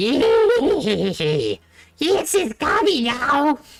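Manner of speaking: very high, very slow, drawn-out snarling goblin voice. A storyteller voicing the goblin blocking the road, in a snarling goblin voice. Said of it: "this goblin snarl back".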